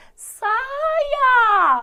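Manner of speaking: very loud, very high, drawn-out imploring wail. Lesson on telling orders from pleas by tone; begging, pleading tone. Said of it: "Aquela coisa de implorar, suplicar, implorar".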